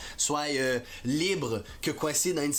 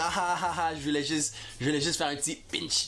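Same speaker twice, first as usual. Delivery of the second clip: usual speaking voice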